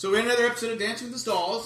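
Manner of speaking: loud, high-pitched yelling. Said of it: "Why are you yelling?".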